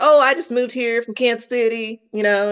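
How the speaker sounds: put-on broad, thick country accent, laid on heavy. Retelling an answer to a woman at castings, in a thick country accent. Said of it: "I had a country accent really thick".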